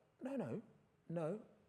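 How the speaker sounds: high-pitched, reassuring tone.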